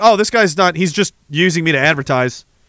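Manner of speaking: ordinary talk, nothing marked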